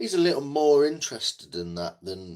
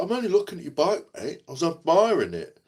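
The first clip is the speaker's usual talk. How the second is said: mock defensive tone, pitched higher; 9 semitones higher than usual. Retelling a biker's reply about watching a bike: imitating someone defensive. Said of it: "he got all defensive and weird about it".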